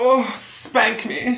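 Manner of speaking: high, very slow, simpering German accent.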